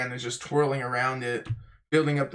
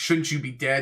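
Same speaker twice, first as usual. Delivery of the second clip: put-on pissed-off, angry character voice. Recapping a fight scene with Luffy, delivering the villain's retort in a mock-angry Moji voice. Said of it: "He's pissed".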